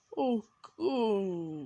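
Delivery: put-on moan in an anime character style. Describing an anime character who weirds them out, the speaker does a Hisoka moan. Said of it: "like a Hisoka moan".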